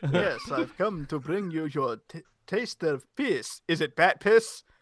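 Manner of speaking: put-on Hungarian accent in a vampire voice. Joining in a group bit, speaking in a Dracula accent. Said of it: "doing a Dracula accent right now".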